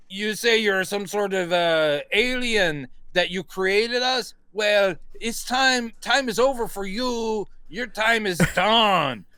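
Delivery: put-on gangster accent. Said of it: ""I'm trying to do Scarface" accent".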